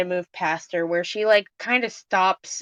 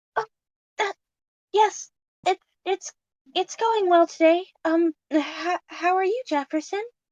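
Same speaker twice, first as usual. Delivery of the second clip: surprised, startled squeak, very high; 11 semitones higher than usual. The narrator voices a woman startled by the group, answering Jefferson: squeaky, surprised voice. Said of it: "she she kind of squeaks, like completely surprised".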